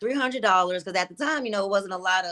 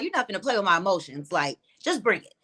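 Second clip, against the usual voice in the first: plain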